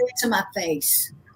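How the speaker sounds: put-on southern accent. Saying a line from a role, asked what accent it was: southern accent. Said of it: "what accent was that?".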